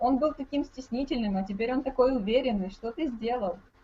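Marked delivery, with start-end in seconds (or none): none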